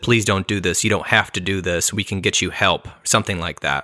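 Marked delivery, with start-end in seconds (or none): 0.0-2.9 put-on crying, pleading tone. Retelling how a woman begged an armed man at a school, retelling a tearful plea. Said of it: "the lady pleaded, cried, and said".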